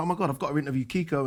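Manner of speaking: ordinary delivery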